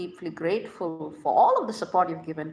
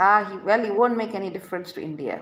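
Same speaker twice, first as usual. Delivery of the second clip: plain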